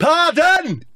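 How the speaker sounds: very high-pitched, loud shouting.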